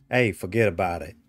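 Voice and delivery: bad put-on New York accent. Joking about new york with another player: bad new york accent. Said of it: "I cannot do a New York accent".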